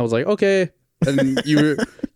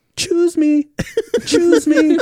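very high, shrill hollering yell; 4 dB louder than usual. Retelling how mom yelled out the car window for directions: retelling mom's yell. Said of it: "she just yells out the window".

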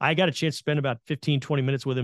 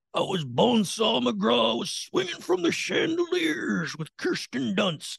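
poor put-on voice, very high, rough, rasping, big swoops; 10 semitones higher than usual. Retelling what Macho Man said about his Spider-Man role: poor Macho Man impersonation. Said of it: "poor Macho Man impersonation".

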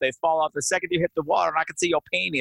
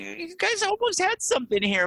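much higher, teasing mock encouraging voice. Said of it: "I'm going".

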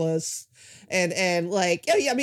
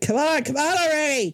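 high, impatient barking-dog voice; 8 semitones higher, 3 dB louder than usual. Voicing a dog that barks impatiently at other dogs: voicing an impatient barking dog. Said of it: "And he just barks at them".

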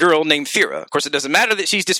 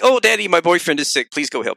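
imitated pleading voice. Retelling a game scene where a daughter hands over a letter: imitating a pleading daughter. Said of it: "and she's like".

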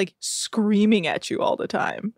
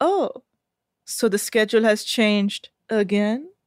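creepy put-on voice. Recapping a scene, the speaker quotes Lara's reply to Hannah as a creepy Lara impression. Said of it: "in the creepiest way".

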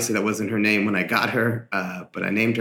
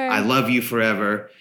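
ordinary talk, nothing marked

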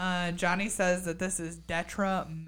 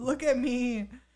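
mock whiny voice, pitched higher than normal; 6 semitones higher than usual. Reading out what they wrote for Mandy, in a put-on whiny Mandy voice. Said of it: "Mandy whiny voice".

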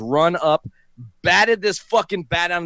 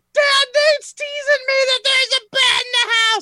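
mock very high, furious, angry screaming yell. Retelling his sister yelling to their dad: imitating sister screaming angrily. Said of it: "she goes screaming out to my dad".

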